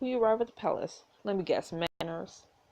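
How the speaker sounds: usual speaking voice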